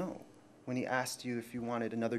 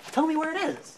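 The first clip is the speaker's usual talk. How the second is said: furious, very loud, very high yell; 8 dB louder than usual. Demanding to be shown where the item is, in an acted argument: yelling. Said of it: "Don't yell at me like that".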